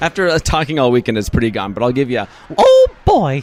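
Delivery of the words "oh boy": cranked way up, bright and loud. Asked for proof despite a worn-out voice, the guest does a Mickey Mouse voice. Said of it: "You are the real Mickey Mouse".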